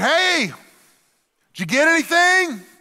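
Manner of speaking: very high, loud hollered call from afar. Retelling a story, the speaker acts out a man calling from the bank: retelling someone calling out. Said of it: "Jesus calls out from the bank".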